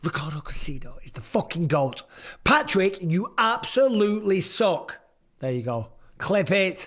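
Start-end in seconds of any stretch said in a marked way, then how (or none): 0.0-5.0 acted-out cocky, brash, needling, taunting trash-talk tone. Recording a line for a clip, in a trash-talking voice. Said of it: "in your trash talking voice".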